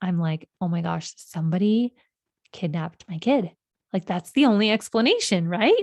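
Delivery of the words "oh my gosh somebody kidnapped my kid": put-on panicked, frantic delivery. Retelling the moment a four-year-old son went missing: imitating own panicked words. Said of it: "so panicked".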